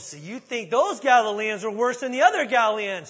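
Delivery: harsh, shrill, very loud angry voice, rising pitch. Picturing Jesus saying it with spit flying: mock-angry Jesus, harsh scolding. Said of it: "he said it with spit flying and finger wagging".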